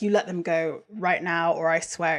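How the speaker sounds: put-on indignant, demanding, righteously angry tone. Retelling a scene where Dean threatens Crowley: imitating righteously angry Dean. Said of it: "Dean is righteously angry".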